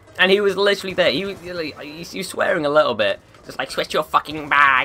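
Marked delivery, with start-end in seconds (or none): 3.7-4.9 mock-angry, harsh outburst. Retelling how a man walking beside them swore about their matching bag: imitating someone angrily swearing. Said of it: "really pissed at me".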